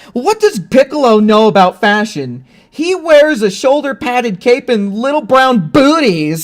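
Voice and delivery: high, pissed-off, mock offended tone. Retelling a dubbed scene where Gohan flies away: imitating Gohan pissed off. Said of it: "he's flying away all pissed off".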